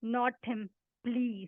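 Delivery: put-on choked whisper. Recounting a plea whispered to the speaker's mother, retelling a choked whisper. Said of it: "In a choked voice, I whispered".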